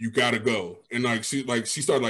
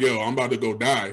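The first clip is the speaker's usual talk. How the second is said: put-on sobbing. Retelling a call where a friend heard the speaker sobbing: retelling own sobbing. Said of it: "I'm sobbing".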